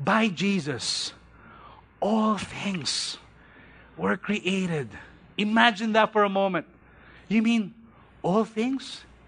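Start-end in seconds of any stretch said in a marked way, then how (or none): 0.0-4.9 very slow, drawn-out, deliberate, soft reading. Speaker reading verse 16 aloud to listeners, very slow. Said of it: "we're going to read this very slowly".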